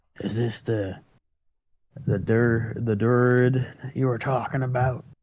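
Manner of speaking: flat, level, half-whispered aside. A player's character, meeting a dryad, half-whispers to a companion: half-whispering. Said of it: "I whispers to Horace".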